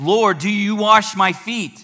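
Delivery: flustered, stunned disbelief. Retelling Peter calling out to Jesus: imitating Peter in disbelief. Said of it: "complete disarray and disbelief".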